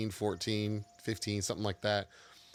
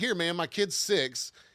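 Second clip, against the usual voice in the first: put-on loud, boisterous Southern man voice, higher, louder; 9 semitones higher, 5 dB louder than usual. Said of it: "very boisterous, you know, uh, Southern man".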